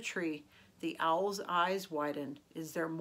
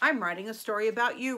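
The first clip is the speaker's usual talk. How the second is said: proud, loud, announcing tone; 3 semitones higher, 6 dB louder than usual. Speaking to the owl the next morning, proud announcement. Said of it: "Rocket announced proudly".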